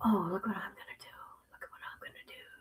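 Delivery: hushed, breathy, very quiet whisper. Speaker tells the guys what they're about to do: whispering. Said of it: "I know I'm whispering".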